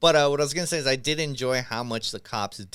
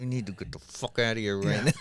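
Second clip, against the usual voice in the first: mock angry, scolding reprimand; 3 semitones lower, 3 dB quieter than usual. Retelling a movie scene where Jim Gordon reprimands Batman: imitating Jim Gordon angrily reprimanding. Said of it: "reprimanding him, and he's mad".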